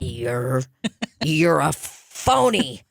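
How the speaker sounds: very slow, drawn-out, pointed, pretend-angry delivery. Acting out telling a rich investor off, mock angry, said slowly. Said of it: "to show him that I'm angry".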